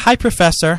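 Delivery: ordinary talk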